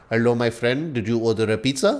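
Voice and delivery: soft, put-on Indian accent. Retelling what they said when a man opened the door: put-on indian accent. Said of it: "I have every right to do an Indian accent".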